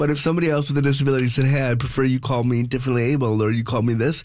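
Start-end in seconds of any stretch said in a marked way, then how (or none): none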